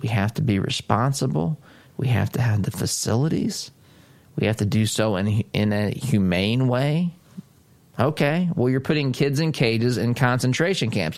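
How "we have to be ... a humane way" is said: soothing, reassuring, nice, calm, even voice. Imitating how Jen Psaki said it, in a nice, calm voice. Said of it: "you heard how Jen Psaki said it, nice, calm voice".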